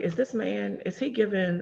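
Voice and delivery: ordinary talk, nothing marked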